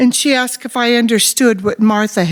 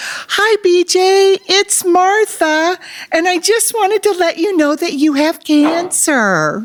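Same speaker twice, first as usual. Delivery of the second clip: mock bright, happy, high-pitched, gleeful cheerful voice; 9 semitones higher than usual. Retelling a phone call giving cancer results: imitating Martha's gleeful voice. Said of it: "she said with a gleeful voice".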